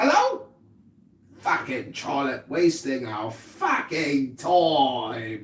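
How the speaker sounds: very deep, low, fake British accent. In a bit where everyone must pretend to be british, using a fake british accent. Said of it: "You gotta use your British accent in the British Accent Society".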